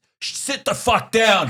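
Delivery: rude, loud, shrill, very high heckler shout. Retelling what a Philly fan behind them kept yelling, imitating someone yelling. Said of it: "start yelling".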